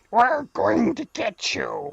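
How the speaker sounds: outrageous orc-like monster voice, slow and high. Imitating the masked raiders from a game, who sounded like orcs: imitating orc-like raider voice. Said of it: "they all sounded like".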